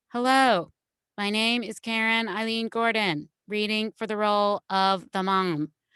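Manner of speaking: stiff, canned, artificial read-off-the-page delivery. Demonstrating how she once read audition copy early in her career: a stiff, artificial copy read. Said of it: "now I'm going to read copy".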